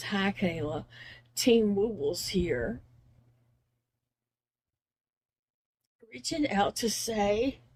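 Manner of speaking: slow, choked-up voice close to tears. Reading aloud a card sent to her, getting choked up. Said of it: "I can't read it. I'm gonna start crying".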